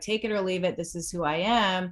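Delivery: ordinary delivery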